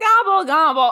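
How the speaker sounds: booming, very loud turkey-like gobble, belted out. Gobbling like a turkey as a joke: Seinfeld turkey voice. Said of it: "I was trying to do a Seinfeld turkey".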